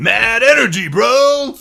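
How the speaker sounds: put-on high, loud, shouted hype-bro voice. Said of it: "That was a good Tyler Hall impression".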